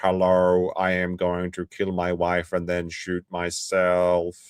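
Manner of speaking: very slow, flat, automated robot-like voice. Explaining how a group's automated phone calls sounded, robot voice. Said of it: "had like a robot voice where it would call up and go".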